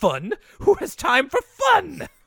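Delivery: manic, very high, drawn-out, swooping outburst. Retelling a scene from the episode, quoting Binky: Binky's manic obsessed voice. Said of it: "I love his obsessed voice".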